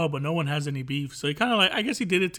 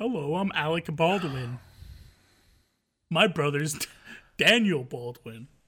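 put-on proper voice at a slower pace.

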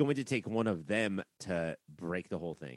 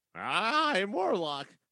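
very high-pitched cartoony character voice; 13 semitones higher, 4 dB louder than usual. Describing how the character sounds in the cartoons: imitating cartoon Warlock. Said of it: "And in the cartoons, he's like".

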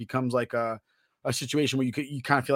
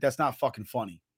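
put-on very serious, grave manner of speaking. Retelling a sergeant's rebuke of a joke: imitating someone speaking very seriously. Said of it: "he said it to me very so seriously".

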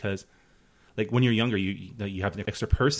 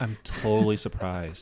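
sarcastic delivery. Reacting to another speaker's story of hitting boys as a kid: sarcastic. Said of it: "I'm being very sarcastic right now".

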